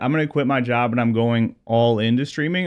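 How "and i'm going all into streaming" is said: normal talking voice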